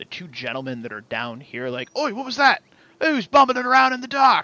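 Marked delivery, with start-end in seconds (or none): 2.0-4.4 nervous, startled yell, very high and very loud. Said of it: "Why are you two yelling?".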